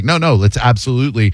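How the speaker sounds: ordinary talk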